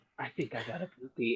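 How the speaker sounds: hushed whisper, barely audible. Retelling how someone whispered in another person's ear: imitating someone whispering. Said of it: "whispers in his ear".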